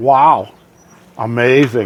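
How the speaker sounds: sarcastic fake astonishment. Reacting to winds dropping only four miles per hour: sarcastic. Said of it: "there was a little sarcasm in there".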